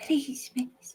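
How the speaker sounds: put-on soft ghostly child voice. A ghostly child answers a player's questions behind a door; ghostly, soft, young voice. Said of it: "Ghostly, soft, tragically young".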